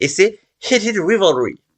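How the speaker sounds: bad English accent. French speaker naming a series with an English title, in a bad English accent. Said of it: "Merci l'accent anglais de merde".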